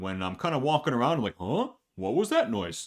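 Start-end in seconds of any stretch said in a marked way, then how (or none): 1.4-2.9 high-pitched, swooping, dopey dim-witted voice. Voicing a game character, a dumb enemy guard: Harold voice. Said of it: "This is Harold".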